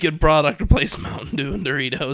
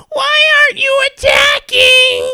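put-on shrieking child voice, much higher and louder; 9 dB louder than usual. Retelling a 12-year-old shouting in game voice chat, shrieking child voice. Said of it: "12-year-old child shrieking".

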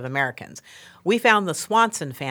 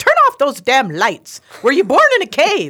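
very loud, shrill, swooping scolding yell, slightly Irish; 9 semitones higher, 10 dB louder than usual. Retelling staff reports of her evenings turning off lights, yelling as the Queen, a little Irish. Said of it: "Sounds a little Irish".

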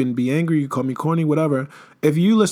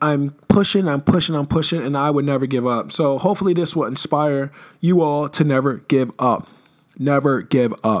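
plain

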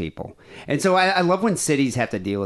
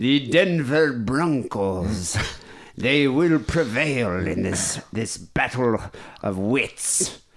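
put-on old, mystical fortune teller voice.

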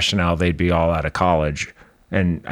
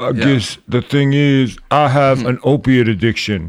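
put-on slurring voice, higher and louder; 7 semitones higher, 4 dB louder than usual. Imitating an actor from Euphoria who talks like this: imitating Angus Cloud. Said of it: "The guy who talks like this".

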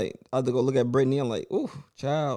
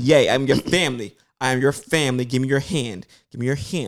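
put-on acted, patronizing, coaxing lady voice, as to a child; 4 dB louder than usual. Retelling how a lady tried to calm someone: imitating talking like to a kid. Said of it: "she talking to him like a kid".

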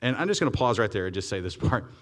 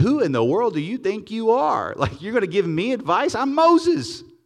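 proud, affronted, indignant, high and slow; 11 semitones higher, 5 dB louder than usual. Acting out a proud reply to advice: Moses' prideful attitude. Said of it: "the attitude could be".

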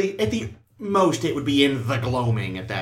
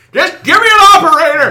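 put-on very high, shrill, very loud old-man yelling; 14 dB louder than usual. Mocking a caller stuck on a computerized phone line, imitating an old man yelling. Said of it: "an old man yelling at the computerized voice".

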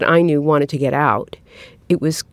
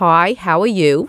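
put-on Brooklyn accent; 2 semitones higher than usual. Showing how she talks on the phone with a cousin: imitating her own Brooklyn accent. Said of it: "Suddenly you're talking like this".

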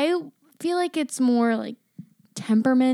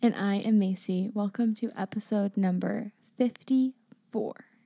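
steady, serious, lower and quieter; 5 semitones lower, 6 dB quieter than usual. Opening the podcast episode, the co-host introduces herself in her NPR voice. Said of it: "using her NPR voice".

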